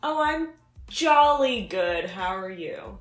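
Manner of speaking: faintly sarcastic, with swooping pitch. Greeted by his co-host at the show's start, he replies kind of sarcastic. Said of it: "You sounded kind of sarcastic".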